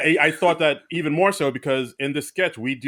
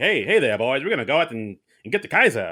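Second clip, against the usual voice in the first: vintage forties Hollywood film-star voice; 2 semitones lower than usual. Retelling how characters in a 1944 sketch talk: old-timey 1940s talk. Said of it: "old-timey forties talk".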